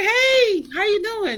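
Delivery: very high, forced, fake-cheerful voice. Retelling a phone call to an older brother, fake happy greeting. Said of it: "Trying to put that fake happiness on it".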